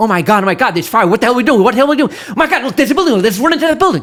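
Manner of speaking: loud, frantic, panicked babbling, rising. Retelling to a man how his patrol reacted under fire, acting out panic. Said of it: "You guys start panicking like".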